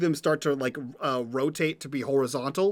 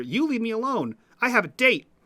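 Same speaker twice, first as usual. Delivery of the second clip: eerie, raised-pitch voice; 7 semitones higher than usual. Voicing a dumpster that mimics the player's earlier line: mimicking the player's voice. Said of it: "in a perfect mimic of your voice".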